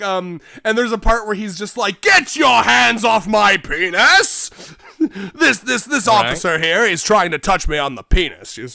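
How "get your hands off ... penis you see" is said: put-on theatrical outburst, louder. Retelling a man's protest to police officers: retelling a performative outburst. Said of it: "he's like so performative".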